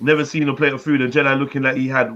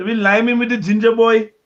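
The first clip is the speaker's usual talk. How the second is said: wild put-on Indian accent drifting Scottish, higher; 8 semitones higher, 4 dB louder than usual. Joking about the ginger boy, mad Indian then Scottish accent. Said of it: "I went mad Indian there, and then Scottish at the end".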